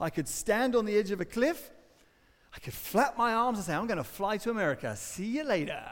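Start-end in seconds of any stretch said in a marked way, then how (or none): none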